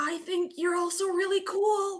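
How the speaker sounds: whispered voice. Speaker retells her own reply to someone on her shoulder, retelling a whisper. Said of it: "I whisper because I can tell".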